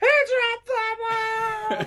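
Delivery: put-on very high shrill yell, ball drawn out. Retelling a broadcaster's call of a dropped ball: imitating Ron Santo yelling at the top of his lungs. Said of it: "just flipping out at the top of his lungs".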